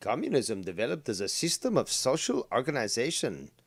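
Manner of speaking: put-on German accent. Speaking to listeners, switching into a put-on German accent. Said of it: "I'm speaking that in German accent".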